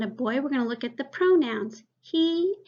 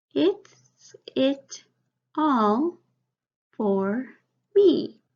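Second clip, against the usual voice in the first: very slow, choppy, halting word-by-word reading; 3 dB louder than usual. Reading a sentence aloud before rereading it more fluently, in a less fluent reading. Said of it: "Now I'm going to read it more fluently".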